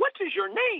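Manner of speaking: thin, very high-pitched, startled voice. Retelling a man who ran up to him asking his name, in a high-pitched voice. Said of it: "In this high-pitched voice".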